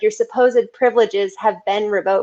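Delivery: ordinary delivery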